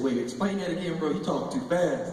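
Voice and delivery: plain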